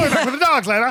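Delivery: silly, high-pitched cartoon voice. Quoting a Bond film character's line to a co-host, in a Terrence and Phillip voice. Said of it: "he also sounds like Terrence and Phillip".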